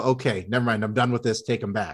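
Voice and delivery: ordinary delivery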